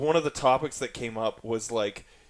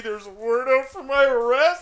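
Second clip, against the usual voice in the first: mock crying, higher and louder; 13 semitones higher, 6 dB louder than usual. Retelling a video where a man cried about police: imitating someone crying. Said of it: "he put up the video crying".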